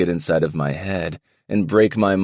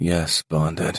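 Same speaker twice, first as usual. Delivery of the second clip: murmured, flat, mechanical robotic monotone. Narrator reading the little brother's two words, robotic monotone murmur. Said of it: "murmurs with a robotic monotone voice".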